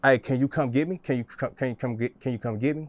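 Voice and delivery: play-acted anxious, halting, panicked stammer with tangled false starts. Retelling calling a girlfriend for a ride during an anxiety attack: reenacting own panicked halting speech. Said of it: "That's how I'm talking".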